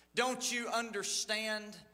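ordinary delivery, nothing marked

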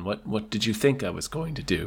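soothing giant spider voice. Speaker imagining a giant spider talking to its victim, soothing giant spider voice. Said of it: "talking to you in a soothing tone".

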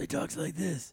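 rough, rasping voice on the breath. Imitating how someone talks: imitating a raspy voice. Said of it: "He's got a real raspy voice".

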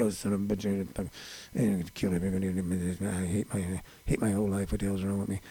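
very hushed, low, angry muttering. Speaker acts out how they usually walk around in public, imitating angry mumbling. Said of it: "mumbling to myself angrily".

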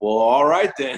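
put-on West Virginia accent, put on. Retelling the reply he got after offering to pitch, imitating a west virginia accent. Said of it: "like a West Virginia-type accent".

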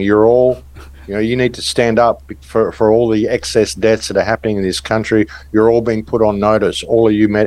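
ordinary delivery

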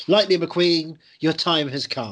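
loud, slick, cocky and challenging tone. Describing a new rival in a film, voicing a slick young car. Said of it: "slick young car getting involved".

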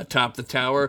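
plain reading voice

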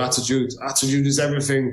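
choppy, halting broken English. Retelling what his Brazilian coach used to say, imitating Francisco Filho's broken English. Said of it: "and his broken English".

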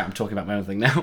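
ordinary delivery

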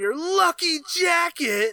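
line breaking into a scream. Retelling an actor's line from a chase scene: imitating Jerry O'Connell screaming last words. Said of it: "he screams the last couple words just like, like Josh would".

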